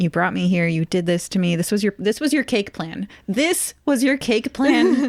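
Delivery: acted, mock-exasperated, frustrated tone. Retelling a story, voicing him reproaching her, mock-exasperated. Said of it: "he just looks at her exasperated".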